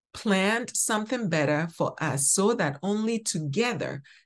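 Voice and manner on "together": stress placed on the word "together". Reading Hebrews 11 verse 40 aloud to listeners, stress on together. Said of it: "emphasis on together".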